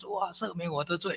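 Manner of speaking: plain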